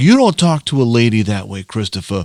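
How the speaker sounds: put-on Brooklyn-accented speech.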